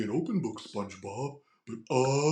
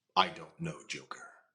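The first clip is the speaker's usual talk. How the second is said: stoic put-on superhero voice, lower and quieter; 8 semitones lower, 8 dB quieter than usual. Showing the contrast with the Joker voice: stoic Batman voice. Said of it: "like Batman".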